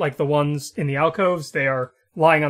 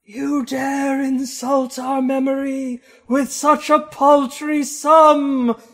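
very high, slow, eerie, ghostly intoning; 11 semitones higher than usual. Voicing two spectral figures rising from a tomb: spectral figure voice. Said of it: "and they say".

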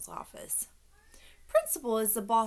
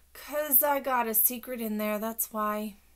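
ordinary delivery, nothing marked

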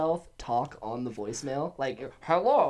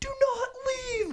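put-on, shrill, very high screaming. Retelling a boss screaming at them at the shop: imitating Lala screaming. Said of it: "Remember when Lala was screaming at me?".

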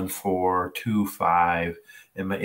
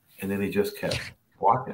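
ordinary talk

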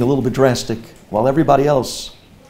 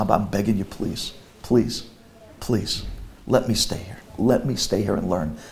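soft, heartfelt mock begging, over and over; 5 semitones lower, 8 dB quieter than usual. Retelling a phone call to their father: retelling own pleading. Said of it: "I begged him with my entire heart".

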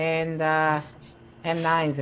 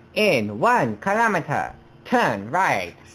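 car navigation announcer voice. Giving driving directions to a driver as a GPS: Mister Chow GPS voice. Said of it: "I will be on Mister Chow G P S".

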